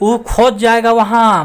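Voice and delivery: forceful emphatic delivery, loud, high-pitched and slow.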